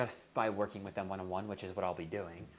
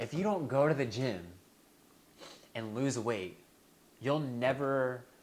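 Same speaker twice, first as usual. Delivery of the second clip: tearful, choked-up voice catching on the tears; 3 semitones higher, 4 dB louder than usual. Recalling the phrase he used to shame himself into the gym, tearing up. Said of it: "I'm like tearing up thinking about it".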